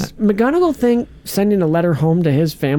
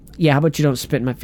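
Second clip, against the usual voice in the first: usual speaking voice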